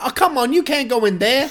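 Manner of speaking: very high-pitched, loud hollering yell. Recalling watching the movie, retelling yelling at the TV. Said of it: "yelling at the TV going".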